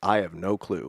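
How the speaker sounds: mock straight-faced tone. Retelling a favorite movie joke, a character's reply: imitating a deadpan reply. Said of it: "he just says in a straight face".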